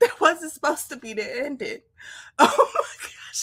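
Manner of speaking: laughing hard through words, crying with laughter. Reacting to the wrong video playing at the end of a live, laughing hard while talking. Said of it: "I'm crying".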